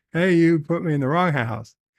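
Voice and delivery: ordinary talk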